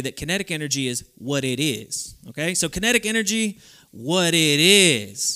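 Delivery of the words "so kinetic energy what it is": loud, sassy, with attitude, drawn out. Speaker teaching a phrase for kinetic energy, saying it with attitude. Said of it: "we're going to say this with a little attitude".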